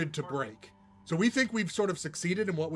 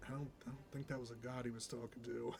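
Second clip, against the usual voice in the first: whispered mutter, much quieter and lower; 5 semitones lower, 18 dB quieter than usual. A game narrator voices a character whispering a remark to himself. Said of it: "Renzi sort of whispers to himself".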